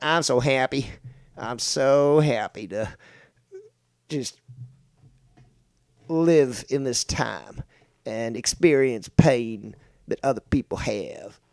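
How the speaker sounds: very slow, bad, put-on Latin American accent.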